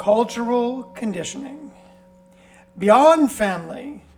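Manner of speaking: loud, theatrical, grand, dramatic narrator reading voice. Opening the book to page sixteen for listeners, reading a heading in a dramatic voice. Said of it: "You like that voice?".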